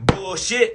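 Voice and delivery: worked-up, emotional, dismissive delivery. A speaker addressing listeners, calling it out, emotional. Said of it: "I'm getting a little emotional right now".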